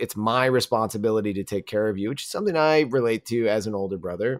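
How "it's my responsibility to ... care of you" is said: ordinary talk, nothing marked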